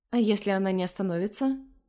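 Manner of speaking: ordinary delivery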